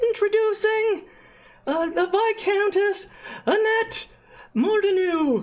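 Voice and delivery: very high, pompous, puffed-up grand herald announcement. Voicing a herald who puffs up his chest introducing the viscountess: puffed-up grand announcement. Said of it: "puffs up his little chest and says".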